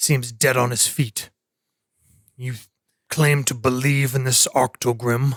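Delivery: gruff, scornful, mocking old man voice. As a council elder addressing newcomers who claim belief in something yet look half dead, speaking in a scornful, gruff manner. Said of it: "The gruff bearded man kind of nods slightly in, / uh, the the burlier young, not young, but for this gr- group, the younger of the two men, um, in his uh, probably in his fifties, / "You help us defea".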